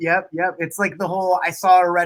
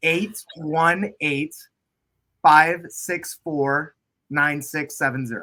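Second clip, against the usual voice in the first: very slow, careful, deliberate delivery. Giving out a phone number to listeners, speaking slowly. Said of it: "I'm going to say it slowly".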